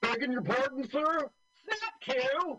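put-on posh upper-class toff voice. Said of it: "Are you doing your Terry Thomas impersonation?".

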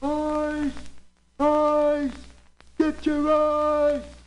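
acted full-voice vendor's cry, very high and very slow. Storyteller voicing an ice wagon driver calling out on the street; yelling at the top of his voice. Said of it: "He's yelling".

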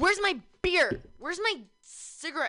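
put-on mad voice. Mocking how a friend acts over a missing beer: imitating Sam, mock mad. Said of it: "That's how Sam talks".

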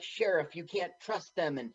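ordinary talk

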